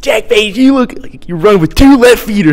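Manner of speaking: put-on Delaware County accent. Describing how he chirped Jack Page, quoting him in a put-on Delco accent. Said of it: "he just puts on this Delco accent".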